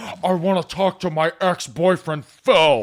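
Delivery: loud, very drawn-out, every word stretched. Imagining someone walking into the podcast: Adam Driver impression. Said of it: "that classic Adam Driver thing".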